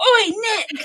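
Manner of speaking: very high-pitched yell in a jock voice. Imitating a character yelling a name across a school gate: Harry's typical jock yell. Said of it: "very typical jock, like, the way that he yells it".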